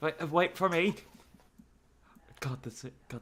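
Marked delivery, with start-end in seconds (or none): 0.0-0.9 put-on British accent, pitched a bit higher. Playing a character running after the others: British accent. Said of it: "this British accent".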